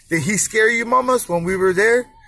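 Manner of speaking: ordinary talk, nothing marked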